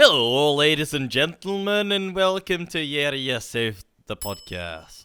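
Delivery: loud, put-on, attempted Scottish accent. Opening the podcast, the host greets listeners in a put-on Scottish accent. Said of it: "Scottish today".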